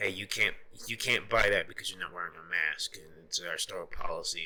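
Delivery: ordinary talk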